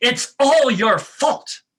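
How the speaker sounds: really accusatory, blaming tone, loud and high. A speaker guides listeners wagging a pointed finger: really accusatory voice. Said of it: "say in a really accusatory voice".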